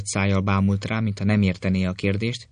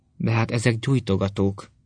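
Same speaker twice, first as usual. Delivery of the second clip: ordinary delivery, nothing marked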